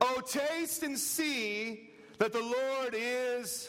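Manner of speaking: very slow, high, expressive reading with feeling. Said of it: "let's read it right".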